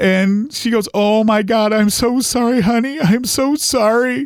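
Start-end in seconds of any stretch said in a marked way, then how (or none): 0.9-4.3 crying, tearful, high, very slowly drawn out. Retelling a grandmother's reply on the phone: imitating someone crying. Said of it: "she started crying".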